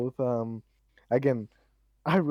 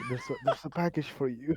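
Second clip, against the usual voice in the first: voice of a man around sixty; 3 semitones higher, 4 dB quieter than usual. Imagining a future in Belgium, imitating sixty-year-old Carl. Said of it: "sixty sixty year old Carl going like".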